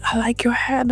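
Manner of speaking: mock whispered voice. Retelling what a guy said to them while whispering: retelling a whisper. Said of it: "he's like whispering and he's like".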